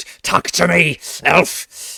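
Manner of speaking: snarled words. Game narrator voicing a character who snarls at Rowan, snarling. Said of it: "he snarls at Rowan and says".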